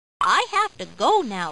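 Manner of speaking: ordinary delivery, nothing marked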